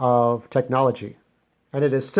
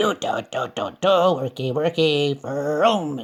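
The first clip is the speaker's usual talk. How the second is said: slow cartoon toy robot voice; 2 semitones higher than usual. Showing how the robot bulldog Silibone sounds: Silibone's robot voice. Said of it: "So his voice sounds like".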